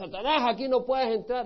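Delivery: put-on, restrained, battle-cry style shouting. Mocking people at church events who yell at satan: imitating someone shouting. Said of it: "Y te pones a gritar".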